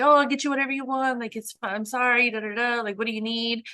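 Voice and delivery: mock half-yelled, placating, trying to sound nice. Retelling how Artie yelled while trying to be nice at first, imitating Artie's placating yell. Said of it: "he's yelling like he's trying to be nice".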